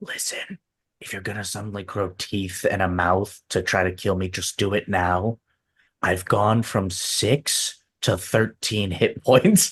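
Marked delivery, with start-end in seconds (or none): 0.0-5.4 low, hushed half-whisper under the breath. A player voices his character speaking to a chest: half-whispering to the chest. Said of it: "He whispers to the chest".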